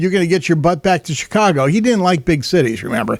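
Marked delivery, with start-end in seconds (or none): none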